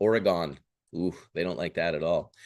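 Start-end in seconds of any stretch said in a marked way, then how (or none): 0.0-0.6 oregon in Canadian pronunciation, lower. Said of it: "what we call Oregon".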